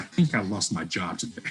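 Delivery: ordinary talk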